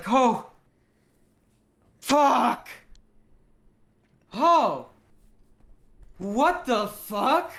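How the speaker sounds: shocked exclamation, very slow, high and loud. Voicing a character who suddenly jolts up: startled outburst. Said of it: "Hacker Hank jolts up and is like".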